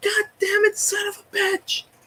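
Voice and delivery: very high, drawn-out, acted-out screaming. Retelling cursing outside the store after a lost game: imitating own past screaming. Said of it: "he's out there screaming".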